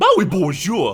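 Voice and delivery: loud, wide-ranging mock South African French accent.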